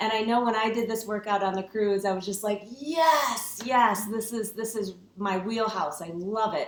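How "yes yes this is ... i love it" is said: ordinary talk, nothing marked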